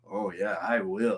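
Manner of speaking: very slow, flirtatious drawl, every word stretched. Retelling a movie scene where the actor flirts back: imitating Corey Feldman flirting. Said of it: "He literally speaks like that".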